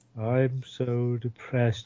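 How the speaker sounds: put-on depressed voice. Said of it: "I'm going to introduce everybody like this".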